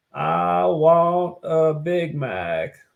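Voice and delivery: very slow, lingering put-on voice, every word drawn out. Joking about a president eating McDonald's: Bill Clinton impression. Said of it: "a Clinton impression now".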